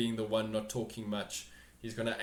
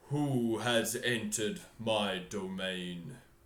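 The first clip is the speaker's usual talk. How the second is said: low, deep creature voice. Narrator voicing the head as it lifts toward the intruder: deep voice. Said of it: "and in a deep voice".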